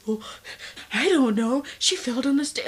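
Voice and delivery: badly acted, fake-sounding, high and loud. Retelling a caller's answer to how many stairs: imitating a fake-sounding reply. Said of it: "he sounds so fake doing it".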